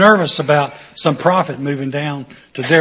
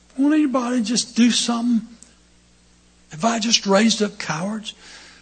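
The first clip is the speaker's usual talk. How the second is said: imitated king voice, soft, high, exasperated, fed-up lament; 8 semitones higher, 5 dB quieter than usual. Telling how the king never ordered anyone to kill, you act his words in a King Henry imitation. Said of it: "a good imitation of Henry".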